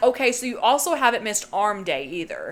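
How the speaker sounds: plain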